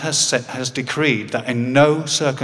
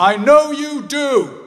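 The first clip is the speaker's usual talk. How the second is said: mock loud, very high-pitched shout; 14 semitones higher, 5 dB louder than usual. As the speaker leaves, quoting the dad calling out in a loud voice. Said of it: "in a loud voice".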